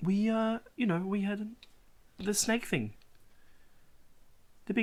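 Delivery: high-pitched put-on New Zealand accent. Voicing the Harengon, answering how they got there; Kiwi accent for the Harengon. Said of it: "give the Harengon the Kiwi voice".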